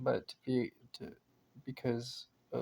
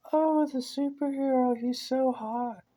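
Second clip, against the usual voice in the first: very high, very slow, admiring lady voice; 12 semitones higher, 5 dB louder than usual. Retelling what a group of ladies said: imitating a group of ladies. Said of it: "my lady voice isn't very good".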